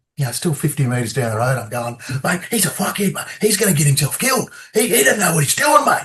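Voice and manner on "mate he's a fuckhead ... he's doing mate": play-acted very high, worked-up angry rant. Retelling what he said while walking down the road, retelling his own angry outburst. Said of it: "and I'm all angry".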